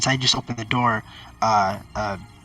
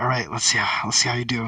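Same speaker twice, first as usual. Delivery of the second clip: whispering softly. Voicing a character who pulls out a crossbow: whispering to himself. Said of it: "I just whisper to myself".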